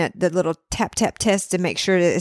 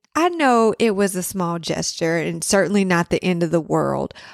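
ordinary talk

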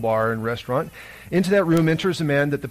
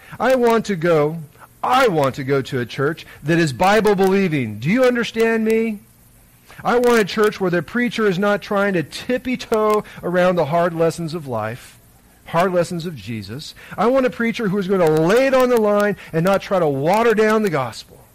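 imitated loud speech, much higher pitch; 5 semitones higher, 4 dB louder than usual. Speaker quotes a man addressing the pastor by first name: retelling him saying it loudly. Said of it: "he says loudly".

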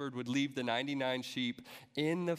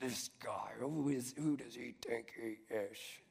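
hushed, disgusted, contemptuous muttering grumble; 2 semitones lower, 6 dB quieter than usual. Preaching, acting out what the grumblers said about Jesus: acting out disgusted grumbling. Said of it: "grumbling to each other".

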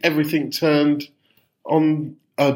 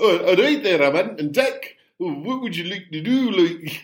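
put-on Geordie accent; 3 semitones higher than usual. Recalling trying an impression at the weekend, the speaker does an Ant and Dec impression. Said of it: "I was trying to do an Anton Deck impression".

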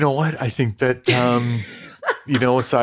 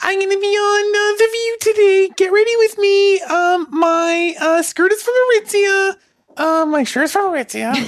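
put-on little girl voice; 5 dB louder than usual. Doing a get-ready-with-me bit, the speaker talks in a little girl voice. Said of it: "The little girl voice".

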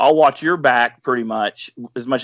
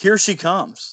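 full-throated, loud, high-pitched yell; 7 semitones higher than usual. Retelling a hunting partner calling out across silent woods: imitating someone yelling loudly. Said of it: "he is yelling at the top of his lungs".

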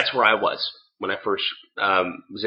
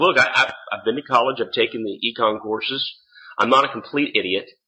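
normal talking voice

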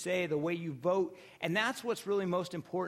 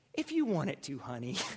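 put-on sweet, tender motherly voice; 3 semitones lower than usual. Retelling what she said in reply to him, imitating a sweet motherly voice. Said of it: "in this sweet motherly voice goes".

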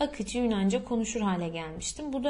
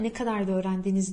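ordinary delivery

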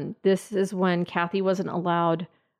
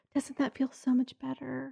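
mock syrupy sweet, soft, pitched-up tender voice; 7 semitones higher, 7 dB quieter than usual. Telling Kathy's story, acting out what Shelly would say afterward, imitating Shelly's sweet voice. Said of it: "Sweet, sweet voice".

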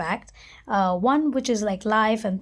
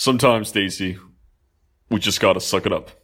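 voice dropped way down, very deep full baritone; 14 semitones lower, 3 dB louder than usual. Repeat for dramatic effect what you told your whining, overworked friend, in a very baritone voice. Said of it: "Igor's very baritone voice".

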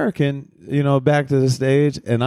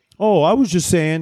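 mock hasty, nervous backpedaling tone; 3 semitones higher than usual. Retelling what a heckler said when confronted after a show: imitating a backpedaling heckler. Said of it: "heard in his voice the backpedaling".

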